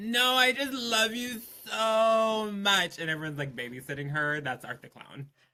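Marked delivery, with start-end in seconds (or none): 0.0-3.0 put-on sloppy drunk-girl gushing, very high and slow. Describing a girl everyone ends up babysitting, imitating a drunk girl. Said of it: "five four locos deep and like ten Long Islands".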